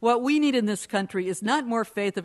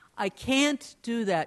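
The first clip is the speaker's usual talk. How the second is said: slow, with can't stressed hard. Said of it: "with the accent on can't".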